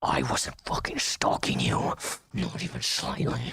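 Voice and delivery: play-acted, seething, rough, frothing, furious outburst. Someone heard in a played clip denies an accusation, frothing with anger. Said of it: "It's frothing from the mouth".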